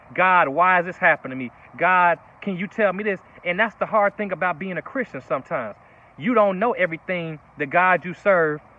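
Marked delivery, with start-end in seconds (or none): none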